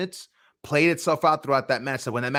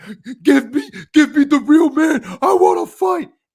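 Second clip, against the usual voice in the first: very high, very loud fight-promo scream; 11 semitones higher, 8 dB louder than usual. Mocking a wrestler's repeated promo line: imitating Eddie Kingston's fight promo. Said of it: "you've done that promo with Chris Jericho".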